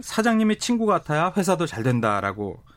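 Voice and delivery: normal talking voice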